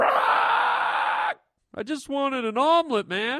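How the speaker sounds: high, slow, anguished shout.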